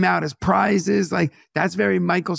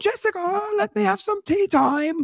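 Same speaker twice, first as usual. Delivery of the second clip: helium-squeaky, very high put-on British accent; 13 semitones higher than usual. Imitating a sister-in-law's british mother: put-on british accent. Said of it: "how come when you speak British, you also have to do it in the style of just sucked helium".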